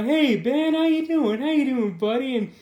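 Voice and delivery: very sarcastic, high-pitched, mock-friendly tone. Retelling a comic scene where the girlfriend Carrie greets Ben: imitating Carrie's sarcastic tone. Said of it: "And it's very sarcastic".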